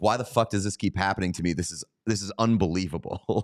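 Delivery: ordinary talk, nothing marked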